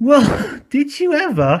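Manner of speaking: put-on two old engine voices exclaiming together, high and drawn out. The two old engines, told the new engine is called Coldy, exclaim. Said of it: "exclaimed the two old engines".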